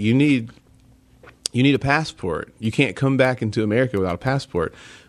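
ordinary talk

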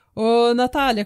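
thick fake Italian accent. Recalling her grandfather's frequent question, the speaker quotes him: imitating strong italian accent. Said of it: "com aquele sotaque bem italiano".

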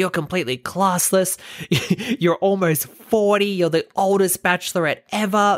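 high, shouted voice. Retelling a man heckling a woman as she storms off: imitating someone shouting. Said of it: "he's shouting".

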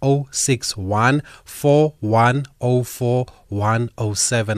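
slow, deliberate, carefully spaced-out delivery. Reading a whatsapp number out to listeners: saying a phone number slowly. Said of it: "I hope I've said that slowly enough".

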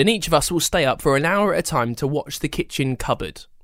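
plain reading voice

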